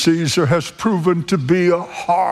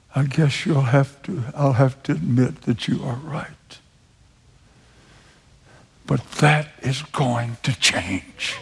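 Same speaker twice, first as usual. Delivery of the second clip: put-on very hushed voice, lower; 4 semitones lower than usual. Retelling a friend's admission during a discussion: imitating a very hushed voice. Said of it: "with a very hushed voice".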